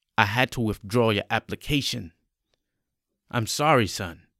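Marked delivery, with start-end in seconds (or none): none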